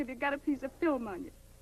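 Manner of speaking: ordinary delivery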